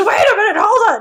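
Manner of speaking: very high-pitched, puppet-like scream. Retelling how a man jumps up in a scene and screams like a Muppet. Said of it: "Mike jumps and screams".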